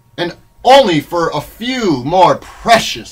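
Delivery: ordinary delivery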